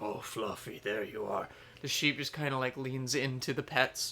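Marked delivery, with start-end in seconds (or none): 0.0-1.5 low, deep giant one-eyed creature voice. Voicing the Cyclops greeting its returned sheep: Cyclops voice. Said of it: "the Cyclops look down at it ... and goes".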